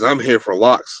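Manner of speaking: play-acted rude, impolite tone. Retelling how a locksmith walked in and spoke: imitating a rude remark. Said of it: "rudely says".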